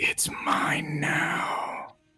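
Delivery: almost whispering. Voicing something heard only by her, in the back of her head: almost a whisper. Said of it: "almost like a whisper".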